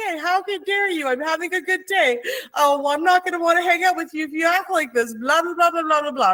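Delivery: very high, upset ranting, like a meltdown. Retelling her own meltdown in the middle of the store: imitating own upset meltdown. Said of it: "I got upset and I had a meltdown".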